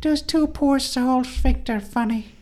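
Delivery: very high-pitched voice. Retelling what the other speaker's mom said about the podcast: imitating your mom. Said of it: "and she's like".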